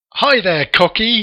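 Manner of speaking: high, loud shout, called out. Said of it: "he shouts out".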